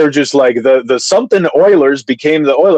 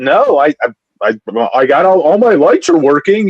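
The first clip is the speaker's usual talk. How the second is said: slow, stumbling, feigned clueless voice. Retelling his answer to a police officer who pulled him over: playing dumb. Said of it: "you got to pull the dumb card".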